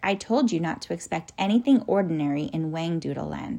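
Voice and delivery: ordinary delivery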